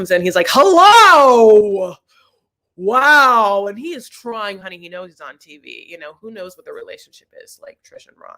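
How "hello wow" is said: big, booming, very loud voice, "wow" stretched. Describing how a man comes in on tv, imitating a booming voice. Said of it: "that man has a very booming voice".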